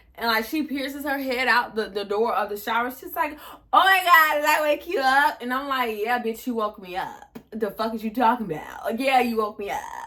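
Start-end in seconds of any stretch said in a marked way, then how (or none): 3.7-5.4 acted, high, woozy drunken voice. Retelling what a woman asked, head poking out the shower door, imitating drunk speech. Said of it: "why she sound drunk?".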